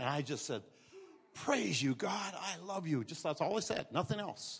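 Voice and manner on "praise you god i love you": slow, soft, barely-there, under-the-breath half-whisper. Retelling own words said weakly on an ambulance gurney: retelling a half-whisper. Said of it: "It was whispered like".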